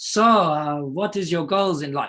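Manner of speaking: terrible put-on Austrian accent, slow and high. Retelling a man across the table asking about his goals, terrible austrian accent. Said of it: "I would do like a terrible Austrian accent".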